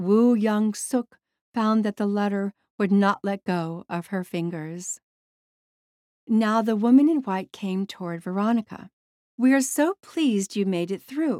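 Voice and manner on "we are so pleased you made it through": warm, welcoming, friendly tone. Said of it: "the woman spoke to her warmly".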